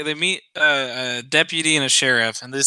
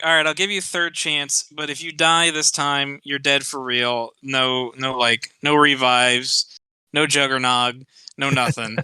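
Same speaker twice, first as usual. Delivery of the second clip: plain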